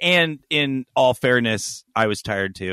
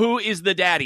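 ordinary delivery

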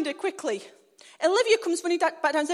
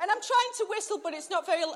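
normal talking voice

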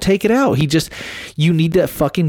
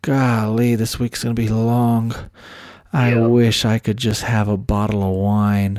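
put-on stressed voice, lower pitch; 6 semitones lower than usual. Retelling what Angie said to Corey: imitating stressed Angie. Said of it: "she looks at Corey stressed".

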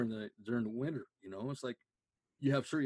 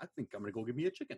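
heavy, thick, put-on Mexican accent. Retelling what a woman said one day, in a heavy thick mexican accent. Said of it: "she's got this heavy thick Mexican accent".

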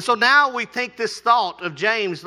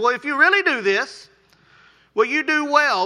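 mock yeah-right sarcastic tone, pitched up; 5 semitones higher than usual. Reading a scripture line as its writer might mean it: reading with a sarcastic tone. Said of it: "it's almost a sarcastic tone".

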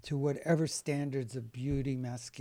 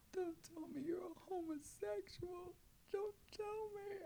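put-on tearful weeping plea, higher and quieter; 16 dB quieter than usual. Retelling a mother's reaction at home, imitating her weeping. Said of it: "she started to weep. She goes".

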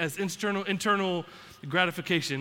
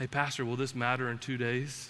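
soft, hushed half-whisper, barely any voice; 7 semitones lower, 6 dB quieter than usual. Retelling a laptop crash, God speaking to the pastor: imitating a half-whisper. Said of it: "God just whispers".

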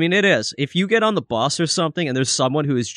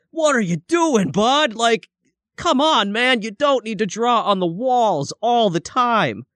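put-on high, yelling, scolding voice; 8 semitones higher than usual. Retelling how they tell off their kid for drawing on walls: imitating yelling at a kid. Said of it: "but I have to yell at my kid".

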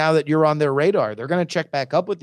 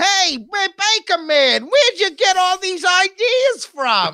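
put-on elderly New York lady voice, pitched way up; 3 dB louder than usual. Describing a movie's final scene with the baker, voicing an old New York lady. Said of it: "like old lady from New York".

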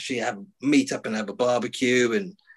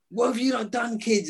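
mock, high screaming shout; 11 semitones higher, 4 dB quieter than usual. Stuck without glasses or clothes, the speaker retells screaming at the kids. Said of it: "there I am screaming, shouting".

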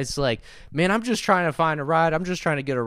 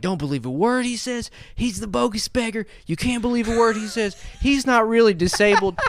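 put-on screaming man voice, higher; 6 semitones higher than usual. Retelling how a man at the window started screaming. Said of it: "this dude is screaming at me".

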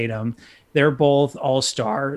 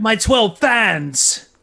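high put-on British accent, "fans" drawn out; 8 semitones higher than usual. Discussing whether the Seahawks quarterback will leave Seattle: Russell Wilson with British accent. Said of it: "Does he have a British accent now?".

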